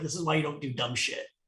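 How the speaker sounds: very soft, hushed half-whisper. Retelling half-whispering into someone's ear: retelling a half-whisper. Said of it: "I whisper in his ear".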